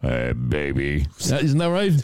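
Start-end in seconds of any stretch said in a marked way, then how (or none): 0.0-1.1 exaggerated, very low, put-on big bass voice. Acting out how the listener talks, in a put-on big deep voice. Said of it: "you're putting on this big, deep voice".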